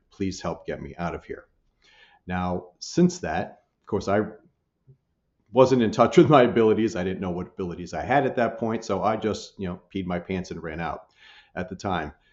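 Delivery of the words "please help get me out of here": put-on whispered pleading, quieter. Retelling a voice heard in an empty storage room: imitating a whisper. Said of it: "I hear whispered".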